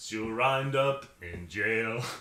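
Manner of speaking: very slow, ominous, every word drawn out.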